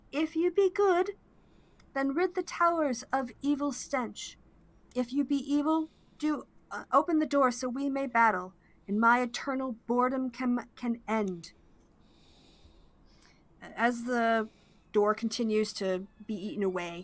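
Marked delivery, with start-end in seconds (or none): 0.1-11.5 harsh rasp, calling out. Narrating to the players, voicing someone calling through a cracked door, raspy voice. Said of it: "you hear a raspy voice calling out to you".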